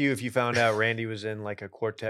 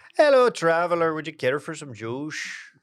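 put-on high tavern barmaid temptress voice; 6 semitones higher, 4 dB louder than usual. Reading a meme's barmaid line aloud as asked, in a barmaid temptress accent. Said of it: "read it in the accent that's implied".

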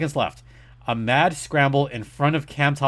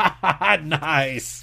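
gleeful, taunting ha-ha laughing. Speaker recalls laughing at the Oilers' misfortune, retelling own laugh at misfortune. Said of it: "I laughed at the misfortune of the Oilers".

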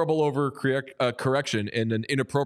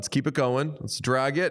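plain

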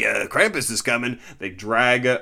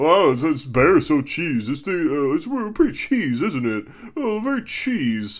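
teasing, jeering, pitched-up parody voice; 5 semitones higher than usual. Mimicking the person sitting across, who keeps calling it cheese: mocking imitation of the co-host. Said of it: "Captain Cheese sitting across from me saying".

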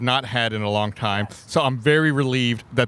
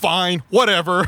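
put-on rudest possible voice, pitched up; 7 semitones higher, 4 dB louder than usual. Retelling the driver answering a friend at a Starbucks order window, in a mock asshole-y voice. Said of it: "In the most asshole-y voice he could".

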